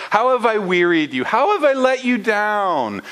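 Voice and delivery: a little snarky. A speaker reading scripture aloud voices God's lines to the people, mock-snarky. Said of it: "God getting a little snarky with the people".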